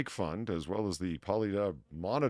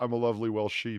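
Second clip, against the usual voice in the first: ordinary delivery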